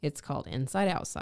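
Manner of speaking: ordinary delivery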